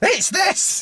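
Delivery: very high, insistent second voice.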